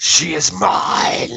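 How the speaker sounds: ominous, deep, dark, rasping voice calling from afar. Voicing a voice from beyond the mountains after thunder: deep, dark voice crying out. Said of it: "A deep, dark voice from beyond the mountains cries out".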